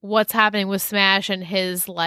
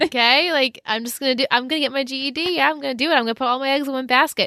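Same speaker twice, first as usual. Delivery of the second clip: high voice, every word said smiling; 5 semitones higher than usual. Imitating how Jason says everything with a smile: imitating Jason, smiling while talking. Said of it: "he says everything with a smile".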